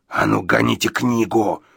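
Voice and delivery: slow, rough, creaky, rasping hiss. Narrator reading Gadson demanding a book from the narrator, hissing. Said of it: "прошипел Гадсон".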